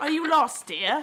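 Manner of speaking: put-on gentle British accent. Acting out a woman speaking to Paddington after a request for it again, put-on British accent. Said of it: "can you do that British accent again?".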